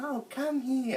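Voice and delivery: very high, sugary, sweet yet creepy voice. Mocking a man who tries to scare kids, mock sweet creepy voice. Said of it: "One minute he has a sweet voice".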